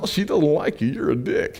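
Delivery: high-pitched, cartoonish voice. Guiding a listener through an exercise, voicing what they hear in Goofy's voice. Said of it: "you hear Goofy's voice going".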